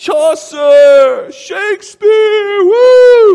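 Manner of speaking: very high, loud pep-rally yell. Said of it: "yelling out their favorite authors".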